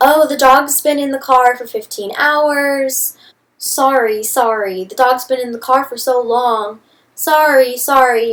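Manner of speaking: snide, sarcastic babbling, "hours" stretched. Guide-dog user retells a dog handler's excuses: sarcastically mimicking an apology. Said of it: "sarcastically repeating that she was sorry".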